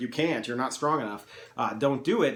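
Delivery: ordinary delivery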